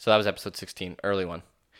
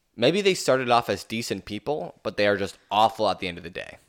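plain

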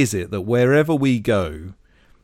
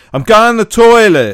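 very loud, pitched-up blurted shout; 9 semitones higher, 10 dB louder than usual. Retelling a cafe story, an old man walking in: imitating a loud shout. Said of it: "shouted loudly".

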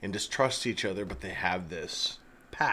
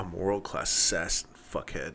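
deadpan put-on impression voice, pitched lower; 3 semitones lower than usual. Quoting your favorite Bruce Willis movie line from the end, do a deadpan Bruce Willis impression. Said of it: "It's just like so deadpan".

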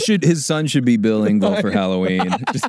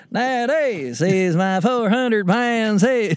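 put-on rural Southern voice, pitched higher; 7 semitones higher than usual. Retelling an impression started in the car, Larry the Cable Guy impression. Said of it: "a Larry the Cable Guy impression".

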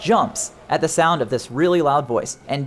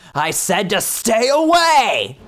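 furious yell, rising scream, stretched out; 5 semitones higher, 3 dB louder than usual. Game master voicing the man on the radio channel at the players: angry screaming male voice. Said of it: "an angry male voice screams at you".

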